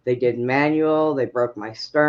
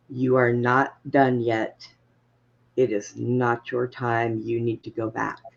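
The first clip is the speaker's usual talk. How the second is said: put-on very calm, deep voice; 3 semitones lower than usual. Retelling what a voice said as the heart was restarted: imitating a very calm, deep voice. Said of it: "a very calm and deep voice".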